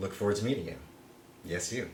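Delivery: very low, very soft, creepiest voice. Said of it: "In my creepiest, creepiest voice".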